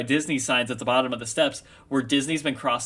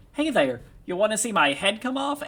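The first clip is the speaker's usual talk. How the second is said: squeaky high voice with big swooping pitch; 8 semitones higher than usual. Retelling how someone read a story's creature aloud: Mickey Mouse voice. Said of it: "in a perfect Mickey voice that just had like slight distortion on it".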